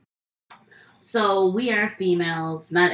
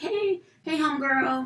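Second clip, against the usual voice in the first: friendly call, not yelled. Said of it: "not even yell, I'm just like".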